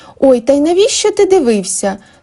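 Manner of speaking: high, reproachful cry. A woman turns to her thin husband, who ran off to vomit, with a reproachful exclamation. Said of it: "з докором вигукнула жінка".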